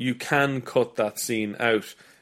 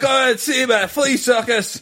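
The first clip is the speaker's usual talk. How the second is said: put-on Scottish brogue, higher and louder; 12 semitones higher, 4 dB louder than usual. Imitating a struggling showman calling out to passersby: Hammond in a Scottish brogue. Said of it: "with a Scottish brogue".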